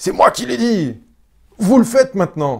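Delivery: high, loud, furious yelling.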